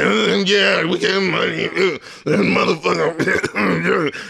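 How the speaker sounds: very slow, rough, groggy just-woke-up drawl, dragged out. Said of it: "sounding like he straight up just woke up after, like, a bender".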